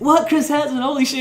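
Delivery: put-on very high, thrilled, excited outburst. Retelling a man's reaction on seeing Chris Hansen: imitating an excited man. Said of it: "the guy's, like, excited".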